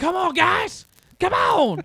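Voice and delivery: very high, shrill screaming. Retelling a man's shouts at the guys with the jaws of life, imitating someone screaming. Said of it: "Jamie Noble screaming".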